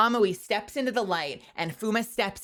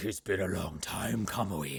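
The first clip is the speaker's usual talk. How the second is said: put-on deep possessed voice, lower and quieter; 13 semitones lower, 7 dB quieter than usual. Retelling an anime scene, imitating Fuma's voice an octave down. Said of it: "he's all the way down there".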